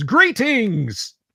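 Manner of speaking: loud, booming robot voice, pitched high. Game master voicing a large robotic unit waking the sleepers: loud booming voice. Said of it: "a loud booming voice that says".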